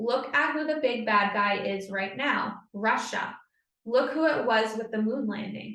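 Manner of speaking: ordinary talk, nothing marked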